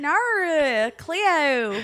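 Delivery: clumsy fake Australian accent, drawn-out "nor". Reading out a comment reply, attempting a bad Australian accent. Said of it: "I can't do the fucking accent".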